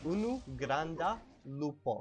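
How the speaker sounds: final vowels stressed in unu, granda, lupo. Teaching how to say one big wolf, emphasized final vowels: unu, granda, lupo. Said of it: "I'm putting an emphasis on the end vowels there so you can kind of hear them".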